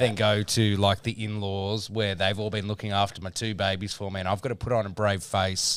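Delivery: plain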